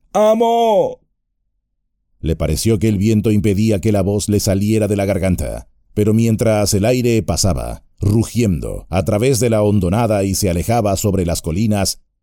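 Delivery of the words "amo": very high shout with "Amo" drawn out. Getting no answer from the cliff, he calls for his master, shouting again. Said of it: "volvió a gritar".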